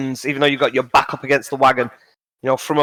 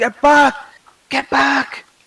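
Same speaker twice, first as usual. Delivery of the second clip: muffled, very high-pitched yelling; 12 semitones higher, 3 dB louder than usual. Voicing a character jumping from a wagon, waving her hands: muffled shout. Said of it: "just this muffled".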